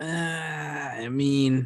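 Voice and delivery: unexcited, slow, high, hesitant drawl.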